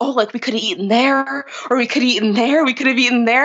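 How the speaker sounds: acted-out, mock panicked delivery. Retelling how a first date reacted while riding past restaurants, mock panic. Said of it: "a panic".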